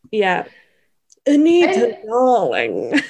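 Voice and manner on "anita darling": nasal put-on voice, higher pitch. Discussing the movie, a podcaster imitates Estella in a nasal Estella voice. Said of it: "Forcing all of her words out of her nose".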